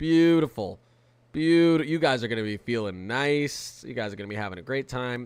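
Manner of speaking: sarcastic, insincere cheerful tone. Calling a cold, below-average Sunday in New England great: sarcastic. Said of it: "I'm being sarcastic".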